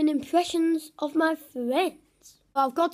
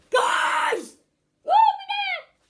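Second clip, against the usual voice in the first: put-on loud shout, higher pitch. Doing an impression of Evo on a football field: imitating Evo shouting. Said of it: "I'm gonna do an impression".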